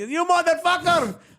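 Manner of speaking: very high, sharp put-on Indian accent. A comedian tells a story and repeats a restaurant manager's outburst in an Indian accent. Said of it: "I'm only using the accent for context".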